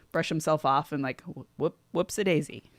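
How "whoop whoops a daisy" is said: ordinary talk, nothing marked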